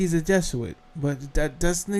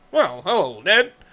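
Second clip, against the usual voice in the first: stiff, uptight, buttoned-up put-on voice; 3 semitones higher, 4 dB louder than usual.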